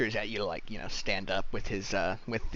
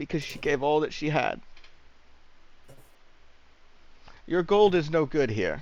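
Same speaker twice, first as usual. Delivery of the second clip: put-on condescending old priest voice, higher and louder; 6 semitones higher, 4 dB louder than usual. Voicing an old priest refusing offered gold: condescending old priest voice. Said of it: "condescending old priest smiles".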